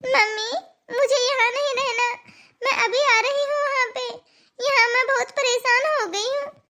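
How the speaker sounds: weeping, upset, tearful voice with pleading tone. A daughter calling her mother on speakerphone, crying. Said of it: "तू रो क्यों रही है?".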